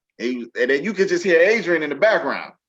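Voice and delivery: ordinary talk, nothing marked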